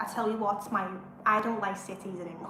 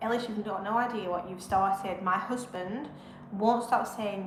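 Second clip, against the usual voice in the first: ordinary delivery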